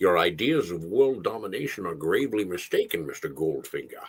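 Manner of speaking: deep low voice, heavy overdone lisp on s. Asked to do a Sean Connery impersonation: Sean Connery impression, heavy lisp. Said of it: "let's hear your Sean impersonation. Sean Connery. ... too much of the leaning into the Sean lisp".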